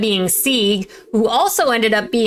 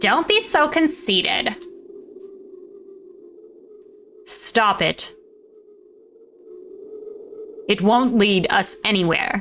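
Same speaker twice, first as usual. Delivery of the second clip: put-on Valley Girl speech; 4 dB quieter than usual. Voicing the character Miranda in a scene, in a Valley Girl voice. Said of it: "we gave Miranda a Valley Girl voice".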